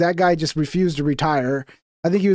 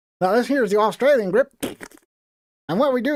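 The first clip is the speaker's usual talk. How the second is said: put-on old-fashioned Southern accent, pitched up; 5 semitones higher than usual. Recalling a man who showed them grips, speaker quotes him in an old-school Southern accent. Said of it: "He had like the like an old school Southern accent".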